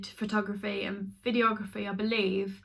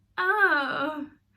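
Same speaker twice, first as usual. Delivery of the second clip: high, fake-bright, gushing, politely delighted tone. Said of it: "it just looked horrible".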